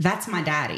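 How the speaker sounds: plain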